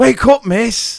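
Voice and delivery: shrill, very high, loud call. Retelling a child waking the speaker by calling out to her, loudly calling. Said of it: "loudly calling".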